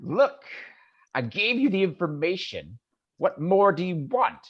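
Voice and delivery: scornful, sneering goblin voice. Voicing a goblin answering a threat from a player: sneering goblin. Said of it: "kinda gives you a sneer".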